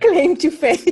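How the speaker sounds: slow, laughing, mocking tone.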